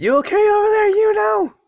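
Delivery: very high, loud, exhausted calling out.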